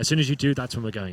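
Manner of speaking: normal talking voice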